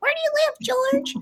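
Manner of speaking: tiny, very high chipmunk squeak. Retelling offering a classmate a ride when both were tiny: little chipmunk voice. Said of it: "I guess I had this little like chipmunk voice".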